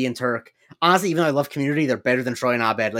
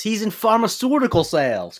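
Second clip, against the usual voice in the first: high, swooping, sing-song put-on voice; 8 semitones higher than usual. Explaining a show character's job, quoting it by mimicking a character's voice. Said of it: "which is why I say it in that voice".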